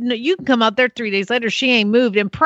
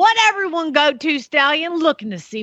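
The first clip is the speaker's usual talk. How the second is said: put-on Southern accent; 4 semitones higher than usual. Speaker rereads a line the way it should be read, mimicking Daddy's Southern accent. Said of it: "I'm just mimicking my daddy".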